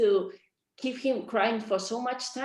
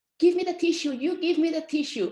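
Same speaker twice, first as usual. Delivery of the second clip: put-on play-acted crying child shouting in high voice; 6 semitones higher, 4 dB louder than usual. Recounting a lunchtime outburst, retelling how he shouted at the speaker. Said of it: "he started to shout to me".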